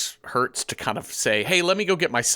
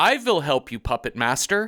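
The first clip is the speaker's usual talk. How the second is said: put-on slight German accent, higher; 3 semitones higher than usual. Quoting a line by a boy named Peter, in Peter's slight German accent. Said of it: "every few words he puts a slight German accent on".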